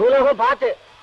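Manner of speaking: loud shouting, calling out. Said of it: "கத்தாத".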